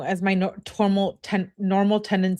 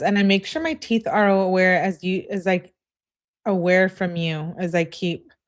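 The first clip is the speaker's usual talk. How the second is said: ordinary delivery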